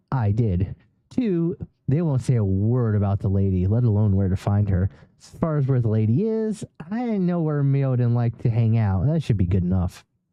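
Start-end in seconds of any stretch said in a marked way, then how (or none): none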